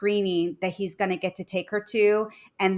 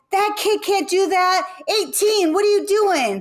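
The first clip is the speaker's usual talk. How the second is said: very high, loud heckling yell; 12 semitones higher, 5 dB louder than usual. Retelling cheering at a child's game, imitating own yelling at referee.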